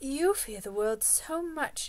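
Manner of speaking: mild, gentle, lightly high voice. She answers the previous speaker gently. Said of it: "she answered gently".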